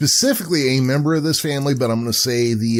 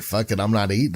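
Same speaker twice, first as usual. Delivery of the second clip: ordinary talk, nothing marked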